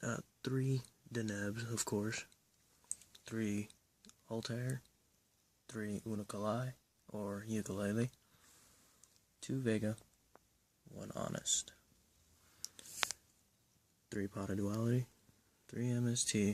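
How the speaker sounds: speaking quietly. Listing cards in a deck while people sleep nearby: speaking quietly. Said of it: "I'm doing it a little differently and quietly because people are sleeping".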